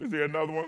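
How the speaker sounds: acted-out choked-up voice, holding back tears. Retelling an altar call while imitating holding back tears. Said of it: "I'm trying not to cry".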